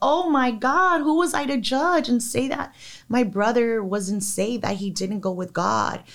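high, bawling cry, sobbing through the words. Telling about a brother's last words, reenacting bawling. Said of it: "I'm bawling like".

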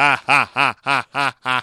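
low, flat, monotone, very slow deadpan ha-ha. Mimicking a movie's ending laugh as a flat monotone laugh. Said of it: "Except it's way more monotone than that".

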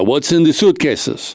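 thick, put-on, fake Costa Rican accent. Imitating a Costa Rican customs officer's question, put-on Costa Rican accent. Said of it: "That's my Costa Rican accent".

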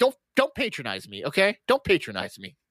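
agitated, freaked-out outburst. Retelling a movie scene where Death freaks out: imitating Death freaking out. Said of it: "Death, like, freaks out on him".

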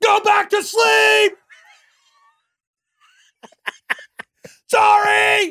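shrill, very loud, high-pitched screaming. Parent in their kid's room as he wakes, only able to scream: mock screaming. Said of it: "Could you imagine if you could only scream?".

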